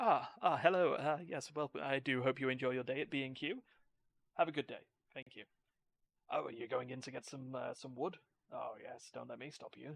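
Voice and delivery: mock, overly polite greeter-style voice. Describing a video character who greets shoppers outside stores, mimicking an overly polite greeter. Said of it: "he politely speaks to people going in and out of stores".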